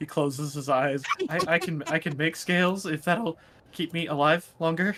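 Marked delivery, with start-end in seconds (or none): 1.3-5.0 terrified, horrified, stumbling, stammering delivery. Voicing a creature begging a dragon queen for its life: horrified, stammering plea. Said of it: "He's horrified right now".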